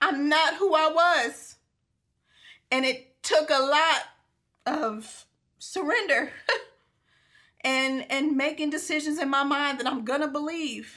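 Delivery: emotional, slow, moved and heartfelt. A speaker sharing how they have changed, getting emotional. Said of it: "I'm getting emotional because that was me".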